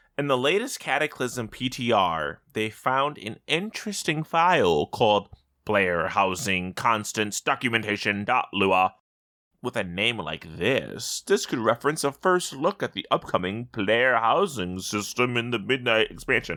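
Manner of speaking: play-acted sarcastic, snippy, snarky reading tone. Reading out a news item about a game file, mimicking Squishy's snarky tone. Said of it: "reading it in his snarky little tone".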